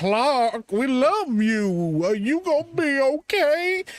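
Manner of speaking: very slow, drawn-out, high, dim-witted voice. Mocking how the Kents talk: the Kents talking real slow. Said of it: "talk real slow like this".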